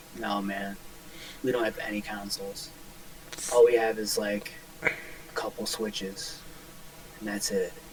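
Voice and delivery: hushed, dead-level, flat monotone near-whisper. Quoting another person's reply about consoles, in a flat monotone voice. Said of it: "In like the most monotone voice".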